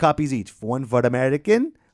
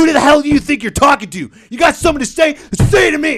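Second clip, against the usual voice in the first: very high, loud, heated, furious yelling; 12 semitones higher, 7 dB louder than usual. Retelling standing up to a belittling coworker: imitating himself yelling. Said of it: "I started yelling".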